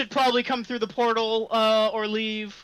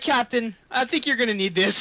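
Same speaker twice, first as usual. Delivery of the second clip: plain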